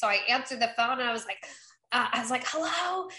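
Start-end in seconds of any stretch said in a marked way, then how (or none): 2.5-3.1 high-pitched, hoarse, lost voice. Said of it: "I had no voice".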